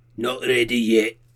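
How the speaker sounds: heavy, thick put-on Scottish brogue, dragon voice.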